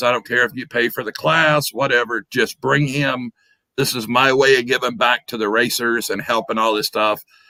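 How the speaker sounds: usual speaking voice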